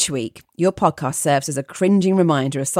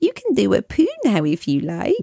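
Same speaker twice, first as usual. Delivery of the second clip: creepy put-on baby voice, whispered, pitched higher; 3 semitones higher than usual. Sneaking up behind a boyfriend to whisper, in a creepy faux baby voice. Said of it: "whispered in a faux baby voice that I made as creepy as possible".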